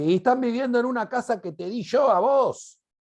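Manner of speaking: high, angry mother voice. Retelling what Roque's mother told him, imitating an angry mother's voice. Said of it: "Con voz de madre".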